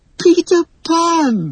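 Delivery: very high joyful cry, 'Pan' stretched. Reading a story, she jumps out of bed at the sight of her hero: crying out with delight. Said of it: "she cried with delight".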